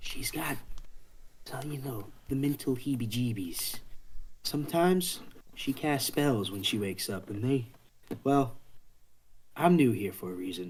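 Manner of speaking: voiced stage whisper, like a shared secret. The narrator voices a cat half-whispering to both players after an old lady snores: half-whispering. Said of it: "He whispers to both of you".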